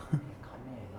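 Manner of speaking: quiet, low whispering.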